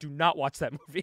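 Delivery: ordinary delivery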